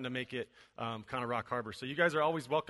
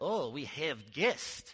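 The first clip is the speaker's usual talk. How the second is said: slow, put-on Ukrainian accent. Retelling what a video-team member said when the speaker walked in, Ukrainian accent imitating Yuri. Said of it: "so I got to use my Ukrainian accent".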